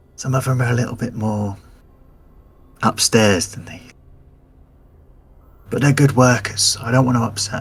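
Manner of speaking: low, quiet voice. Voicing a character leaning close to confide about workers: lowered voice. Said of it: "he sort of lowers his voice and leans over".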